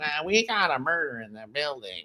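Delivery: very quiet, low, soft murmur. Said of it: "I couldn't get past the [name] talking".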